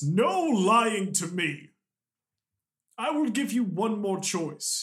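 full-throated shout. Voicing a creature who draws a mace and scowls: yelling. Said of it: "he yells in Celestial".

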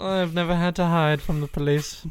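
high, slow regal drawl. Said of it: "I didn't know I was speaking to royalty".

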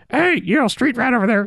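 parrot voice, very high and squawky.

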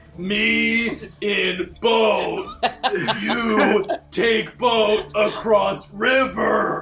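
broken-English dad voice. Walking up to a skeletal figure to ask for a boat ride, in an offensive racist dad tone. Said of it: "in my most offensive racist dad tone i go".

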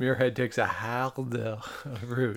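slow, put-on, bad Scottish accent.

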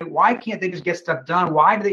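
normal talking voice

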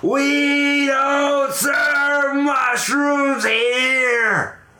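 play-acted, very high, very slow, drawn-out scream. Telling a bar joke, the bartender swings a bat: imitating a screaming bartender. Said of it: "he's screaming".

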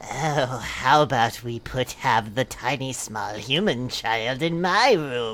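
eerie, sinister, creepy tone, very low pitch. Narrator reads Lua's reply about where to put the baby: creepy voice. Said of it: "spoke Lua in a creepy voice".

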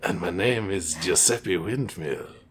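put-on low, slow, soothing Eastern European accent. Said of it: "some sort of Eastern European accent".

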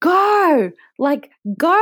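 high, loud, screaming crowd-style yell.

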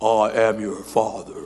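very low, very slow, drawn-out delivery. Imagining how God's voice from heaven sounded: James Earl Jones voice. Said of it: "it had to be like James Earl Jones".

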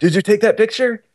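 put-on friendly French accent, pitched a little high. Retelling what another guy standing nearby asked him, in Philippe's French accent. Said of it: "he says it with a French accent".

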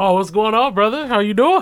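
sudden, quick, high, businesslike professional tone. Greeting a man named as a driver's ed teacher: put-on professional voice. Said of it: "He got professional real quick".

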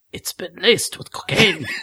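soft, hushed, secretive under-the-breath whisper. Reading a story aloud, a character leans forward and says the next part whispering. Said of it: "whispering the next part".

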